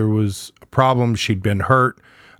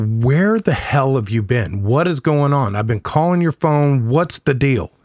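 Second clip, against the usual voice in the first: put-on hot-tempered, heated, angry rapid delivery; 2 semitones higher than usual. Retelling confronting someone who came home late: retelling own heated angry questioning. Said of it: "I'm heated".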